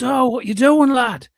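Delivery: mock shouting. Retelling a film scene where a man shouts at someone: imitating a shout. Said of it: "and he shouts".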